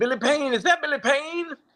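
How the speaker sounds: voice pushed way up high. Retelling how a late friend greeted someone: Dusty Rhodes impression. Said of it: "That's a great Dusty impression".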